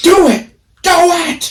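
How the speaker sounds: put-on yell, very high-pitched and very slow. Retelling how a friend yelled to rip the wax strip off: imitating someone yelling. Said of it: "And she's yelling at me".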